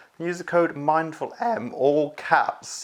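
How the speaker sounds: words dragged out very slowly through high giggling. Reading out a discount code for viewers, laughing while talking. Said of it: "I can't even say that without laughing".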